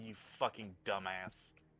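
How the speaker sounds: deep, low, quiet mumble under the breath. Voicing Dante, hand to his forehead: mumbling. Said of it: "just mumble".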